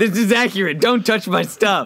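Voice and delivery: sudden, high-pitched shouted outburst. Recreating a scene after someone moves a blue water bottle, yelling. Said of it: "Sorry, I just yelled".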